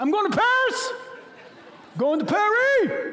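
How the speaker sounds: thrilled, very high, swooping sing-song voice. Answering someone who asks why they're so excited, excited. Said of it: "why are you so excited?".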